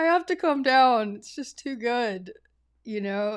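loud giggling through the words. Retelling words said while hanging on a wall, retelling giggling speech. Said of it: "like giggling".

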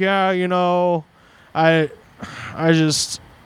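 very slow, halting mumbling. Retelling a caller's hesitant words on the phone: imitating someone mumbling. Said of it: "he's kinda mumbling a bunch".

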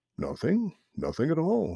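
gentle, mild, easygoing, pitched high. Narrating a frog's reply to another who snapped at him, mildly. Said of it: "replied Grandfather Frog mildly".

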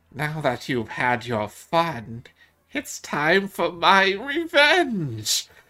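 high, swooping, cackling crone voice. Narrating a hooded rogue figure who approaches you, cackly hag voice. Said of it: "In a cackly voice goes".

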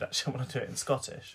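ordinary talk

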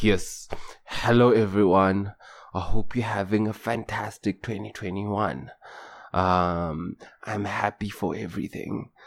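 very low, soft deep voice, I'm stretched.

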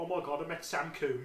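put-on very loud, high, thick Brummie Birmingham accent. Imitating his mum talking about having met him, in a thick brummie accent. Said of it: "I put on a thick Brummie accent".

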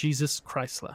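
solemn, respectful delivery. Speaker demonstrates saying a celebrity's car name, said reverently. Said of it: "I'd say it like really reverently".

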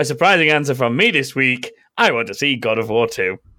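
loud, heavy, dripping sarcastic reading. Showing how a viewer's chat message reads when read aloud: sarcastic reading. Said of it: "if you read it like I just said it".

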